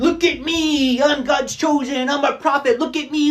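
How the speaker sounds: very high, shrill, drawn-out, showy scream. Mocking self-proclaimed prophets who scream for attention: imitating someone screaming. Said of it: "out there screaming".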